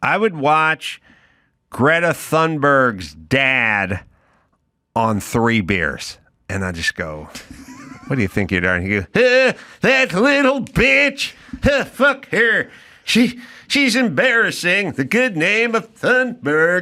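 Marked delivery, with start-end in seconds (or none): 9.1-16.8 put-on tipsy, boozy Swedish accent, pitched up. Imagining Greta Thunberg's dad on three beers answering your question, in a Greta Thunberg's dad accent. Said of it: "Solid accent".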